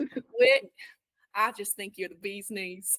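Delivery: put-on American country accent. Trying an accent after being asked for a country one: country accent.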